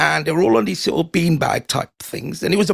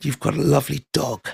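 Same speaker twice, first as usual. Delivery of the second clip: put-on sinister tone; 3 semitones lower than usual. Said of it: "said it in such a sinister way".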